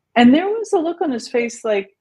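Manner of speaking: ordinary talk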